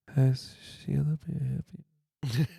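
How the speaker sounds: softest barely-there, hushed speaking voice. Speaker retelling phone calls to mom at FedEx, imitating a very soft talker. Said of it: "the softest talker I've ever heard".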